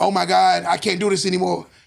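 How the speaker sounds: mock emotional outburst, female voice. Imitating a woman who is getting emotional: imitating an emotional woman. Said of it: "a woman starts getting emotional".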